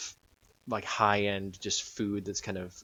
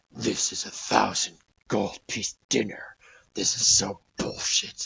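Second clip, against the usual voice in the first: breathy, whispered grumbling; 6 dB louder than usual. Describing the captain's voice echoing through your mind, grumbling to himself. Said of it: "just kind of grumbling to himself almost".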